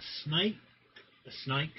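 brief, sudden drop into an Australian accent. Asking a would-you-rather question, slipping into an Australian accent. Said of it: "I went Australian there for a second".

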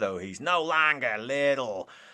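feeble, weak put-on villain voice. Speaker listing the film's characters: Jack Horner voice. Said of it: "my pathetic attempt at doing his voice".

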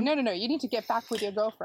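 ordinary talk

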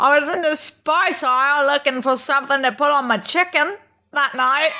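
attempted Australian accent. Acting out an Australian woman's story, in a put-on Australian accent. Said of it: "Let me try to do an Australian accent".

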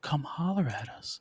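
deliberately creepy put-on voice. Podcast host inviting listeners to get in touch, creepy voice. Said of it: "I'm using this creepy voice".

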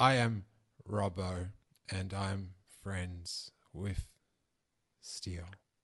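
mock gloomy, depressed-sounding tone. Teasing another speaker who turned gloomy talking about himself; mock-depressed Robbo impression. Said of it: "then you went into a dark depression".

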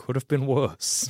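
mumbled under breath. Player character walks through the bar, reflecting on years in Barovia, muttering under breath. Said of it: "under my breath".

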